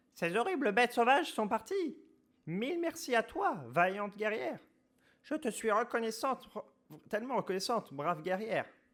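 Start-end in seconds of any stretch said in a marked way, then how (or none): 2.5-8.7 put-on granny voice, higher and louder. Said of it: "la voix de grand-mère".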